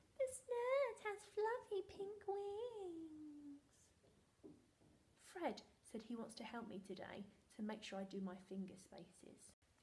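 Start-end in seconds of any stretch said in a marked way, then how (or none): 0.2-3.6 very high, very slow, silly comic voice. Repeating a practice sentence to write, now in a funny voice. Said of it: "Can you do that in a funny voice?".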